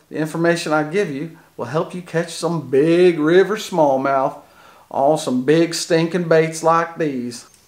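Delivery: put-on odd-sounding Southern country accent. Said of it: "weird down south country accent".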